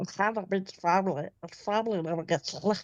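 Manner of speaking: squawking cartoon duck-like voice. Showing friends another voice they can do, a Stitch voice. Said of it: "Donald Duck?".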